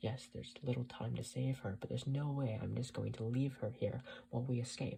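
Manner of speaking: ordinary delivery, nothing marked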